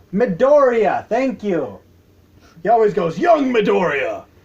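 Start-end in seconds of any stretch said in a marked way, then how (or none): 3.2-4.2 big, manly comic-book superhero voice. Describing an anime, quoting how All Might addresses the boy, in manly Superman voice. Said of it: "in that manly Superman voice".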